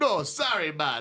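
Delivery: put-on heavy, full Jamaican accent, pitched high. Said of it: "doing full Rasta [name] accent".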